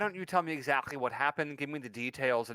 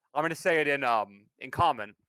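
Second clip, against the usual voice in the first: normal talking voice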